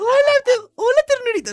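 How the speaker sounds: very high, pitched way up, helium-like voice. Imitating a YouTuber greeting a fan on the street: imitating Yuya's high voice. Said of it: "Así habla, güey, así habla".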